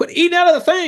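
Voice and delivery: high, loud yelling.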